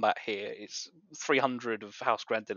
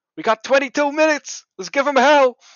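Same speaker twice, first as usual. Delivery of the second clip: very high, very loud rallying battle cry; 15 dB louder than usual. Narrating the scene, voicing someone in the crowd: shouting out. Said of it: "Someone shouts out".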